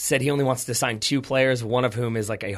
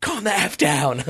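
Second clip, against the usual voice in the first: mock shrieking, high-pitched, drawn-out scream; 6 semitones higher than usual. Retelling a scene where a character shouts at everyone freaking out, imitating a scream. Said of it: "and he screams".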